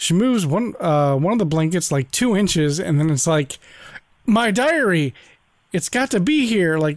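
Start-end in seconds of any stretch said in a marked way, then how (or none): 4.3-6.8 play-acted bad hammy overacting, high and drawn out. Retelling a TV scene, imitating a character's bad acting. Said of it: "that was kinda really bad acting on her part".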